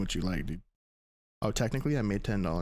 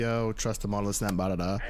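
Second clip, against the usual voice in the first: usual speaking voice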